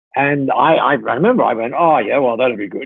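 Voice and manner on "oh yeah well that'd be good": offhand, half brushing-off, dismissive tone. Retelling how you answered her idea back then, retelling a dismissive reply. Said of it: "sort of like dismissing it almost".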